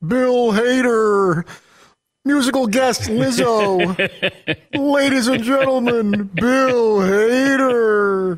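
high announcer voice, name drawn out. Doing a Saturday Night Live announcer introduction: Don Pardo voice. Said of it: "You do Don Pardo of Saturday Night Live".

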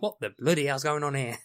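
thoroughly unimpressed, put-out exclamation. Describing the same film scene, imitating Tim Curry: unimpressed. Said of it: "he's less impressed".

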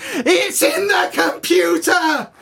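mock very high, very slow shrieking scream. Retelling how a man clutched his head when everything went wrong, imitating someone screaming. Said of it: "he just puts his hands up to his head and starts screaming".

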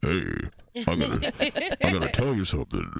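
very low, deep voice with big swooping pitch. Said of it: "with his low, low voice".

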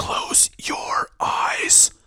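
hushed, deep-toned, angry whisper. Reading a scary story aloud, voicing the whispered line: angry whisper. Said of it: "sounded like a man whispering in anger".

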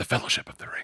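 hushed, breathy whisper. Retelling a Lord of the Rings scene: quieter Frodo voice. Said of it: "says in a quieter voice".

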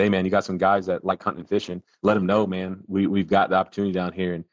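ordinary talk

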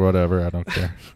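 careless, dismissive shrug-off. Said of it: "which he just is like".

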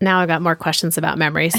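ordinary talk

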